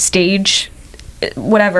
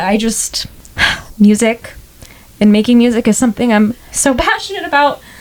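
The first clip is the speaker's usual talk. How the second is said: tearful, halting voice breaking mid-phrase, choking up; 3 semitones higher than usual. A podcast guest talks about being passionate about music: getting emotional, tearful. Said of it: "like I'm getting emotional".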